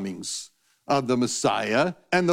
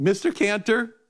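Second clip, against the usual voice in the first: put-on small child's voice, high-pitched nine-year-old girl; 7 semitones higher than usual. Retelling a phone call, quoting the girl who called: high-pitched nine-year-old voice. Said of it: "in this high-pitched 9-year-old voice".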